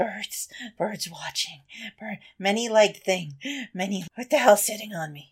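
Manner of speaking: quiet muttering broken by wheezing. Narrating the game, the speaker voices him as he starts muttering: wheezing, muttering. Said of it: "he's, like, wheezing, and then you hear him start muttering".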